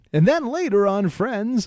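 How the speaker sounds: high, loud tv promo announcer voice. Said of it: "you'd hear an announcer voice say".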